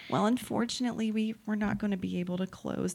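put-on fake sympathy, fake empathy tone. Retelling the lender's phone call about bad news, in Tiffany's fake empathy voice. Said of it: "The fake empathy voice".

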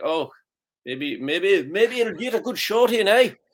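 high, slow, mock Irish accent.

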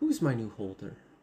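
a woman's speaking voice. Voicing a crystal heard in a player's head: female voice. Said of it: "You hear a female voice".

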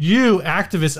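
ordinary delivery

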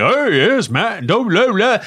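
high-pitched, showy stage-musical voice. Mocking how a cohost said the intro: Little Orphan Annie-like voice. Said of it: "That sounded like Little Orphan Annie show".

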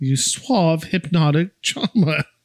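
bad fake British accent still sounding Louisiana. Recapping a scene, speaker quotes a character's line at a mirror: bad British accent. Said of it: "I don't even know how to say this with a British accent".

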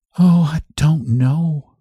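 shrinking, very slow voice. Answering her companion about the other woman, in a voice shrinking from the subject. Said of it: "in a voice that seemed to shrink away from the subject".

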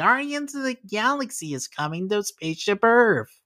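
high stage announcement. Imagining an executive on stage announcing a ride change: Bob Chapek impression. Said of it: "That's a really good impression".

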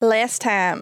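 bad put-on Australian accent. Trying an Australian accent on the spot for the recap: attempted Australian accent. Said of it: "I'll just do Australian".

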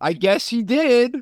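acted, loud, slow and high. Retelling what a woman said while making eye contact with the speaker: real loud. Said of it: "she says real loud".

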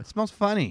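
hushed, conspiratorial tone. Showing how to deliver an observational joke: conspiratorial voice. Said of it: "but you say it like this".

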